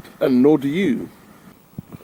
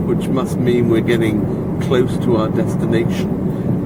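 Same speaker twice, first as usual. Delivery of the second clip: usual speaking voice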